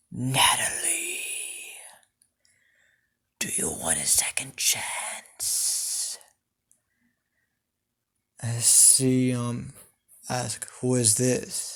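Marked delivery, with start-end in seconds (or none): 0.2-6.2 breathy, evil-sounding, devilish whisper. Narrating a story, the speaker tries out a character's voice: devilish voice. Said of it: "I want to get this um devilish type of voice right".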